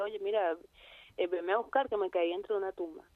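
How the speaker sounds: ordinary talk, nothing marked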